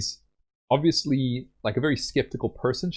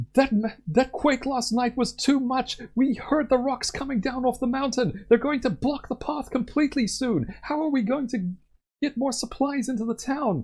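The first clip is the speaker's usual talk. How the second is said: very high, angry shouting from a crowd; 13 semitones higher than usual. Voicing townspeople yelling about a quake blocking supplies: townspeople yelling. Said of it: "she can hear the people yelling".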